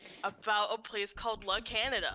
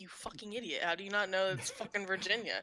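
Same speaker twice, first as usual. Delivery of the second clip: sneering, scornful, contemptuous tone. Retelling how a friend answered a quiz question: imitating a scornful tone. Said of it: "just the way he said it was just like".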